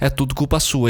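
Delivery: ordinary talk, nothing marked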